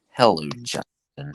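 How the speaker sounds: high, prim church lady impression voice. Echoing another speaker's greeting: Dana Carvey Church Lady impression. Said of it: "Dana Carvey, church lady".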